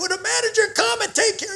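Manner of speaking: mock yelling. Retelling how a lady in front yelled at kids: imitating someone yelling. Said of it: "She starts yelling".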